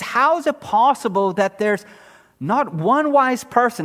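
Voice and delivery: ordinary talk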